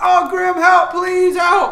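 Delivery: piercing, very high, very loud yell. Narrating a monster attacking the player's sister, voicing her shouting for help. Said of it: "she shouts".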